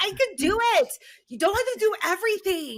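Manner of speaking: put-on very high, loud, swooping little-girl sass. Parent acts out her five-year-old refusing help with her hair: imitating her sassy tone. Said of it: "in her sassy, oh, sassy tone".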